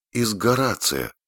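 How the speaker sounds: softly spoken. Franny repeats her words after Sap's joke, quietly repeating. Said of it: "тихо повторила Фрэнни".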